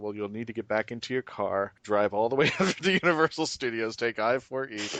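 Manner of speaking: dry, slightly sarcastic tone. Retelling an answer to a guest asking for a ride: retelling a sarcastic reply. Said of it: "I was being a little bit on the sarcastic side".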